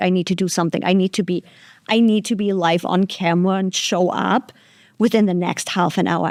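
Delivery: plain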